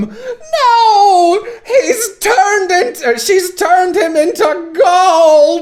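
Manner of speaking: very high, loud voice, long stretched no. Describing the impression she and a friend do together: Percy impression. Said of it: "we specifically do our Percy impression".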